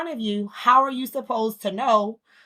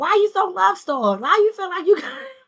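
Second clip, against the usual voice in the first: put-on fussing voice, higher and louder; 9 semitones higher, 4 dB louder than usual. Retelling how mom would fuss at her daughters: imitating mom fussing. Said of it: "she would all, often fuss at us".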